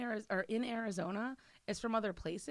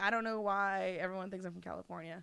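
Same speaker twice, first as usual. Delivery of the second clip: ordinary talk, nothing marked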